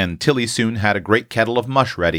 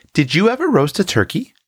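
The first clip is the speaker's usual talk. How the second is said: eager, curious, deeply interested, pitched up; 9 semitones higher than usual. Roxy asks Tilly about the cooking task, deeply interested. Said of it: "with an air of deep interest".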